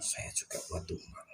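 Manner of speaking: faint, soft, whispered spirit voice.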